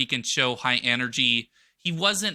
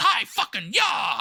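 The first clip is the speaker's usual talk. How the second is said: high, slow, drawn-out yelling shout. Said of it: "and he just yells".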